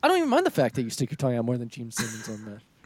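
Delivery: put-on dead-serious delivery, swooping pitch. Retelling a wrestler's line to another speaker: imitating a straight-faced delivery. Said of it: "he says it with such a straight face".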